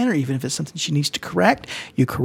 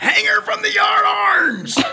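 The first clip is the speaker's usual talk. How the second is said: put-on pirate voice, much higher. The speaker recasts another person's words in a pirate voice. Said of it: "you just wanted to do your pirate voice".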